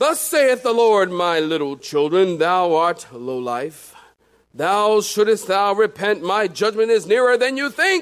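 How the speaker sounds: proclaimed in a scripture-reading manner. Showing how the interpretation would sound, speak as God speaking King James English. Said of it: "as if God spoke in the King James".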